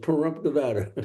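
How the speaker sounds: ordinary talk, nothing marked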